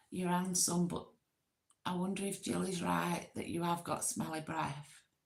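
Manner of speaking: ordinary talk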